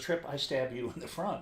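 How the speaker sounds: ordinary talk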